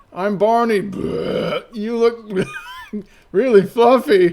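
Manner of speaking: put-on loud, thick, boozy, slurred drunken voice. A narrator voices a disheveled drunk man answering a greeting, Barney's drunk slurred voice. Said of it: "he slurs, his voice thick with drink".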